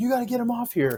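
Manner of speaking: mock very high-pitched, urgent yelling. Retelling a job site story, a speaker imitates the GC yelling at them. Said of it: "the GC is yelling at me like".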